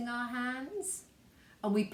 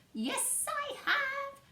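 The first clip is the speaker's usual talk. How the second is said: very high storybook witch's voice. Answering a question about bringing a witch's voice: witch's voice. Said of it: "Have you brought your witch's voice?".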